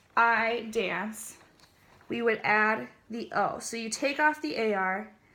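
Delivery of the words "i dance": usual speaking voice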